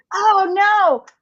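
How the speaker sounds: mock horrified squeal, high and loud.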